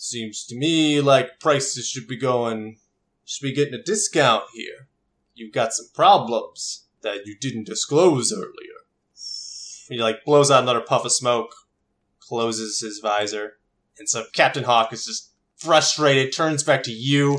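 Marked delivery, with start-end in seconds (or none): 0.0-8.8 really deep voice. Game master voicing a character who disrespects a Dominion officer; real deep voice. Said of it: "he's got a real deep voice".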